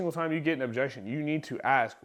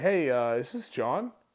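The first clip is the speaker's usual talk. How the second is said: a little confused, unsure, slower. Demonstrating how to open a call to someone who filled out a form: a little confused. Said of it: "I almost treat it like I'm a little confused".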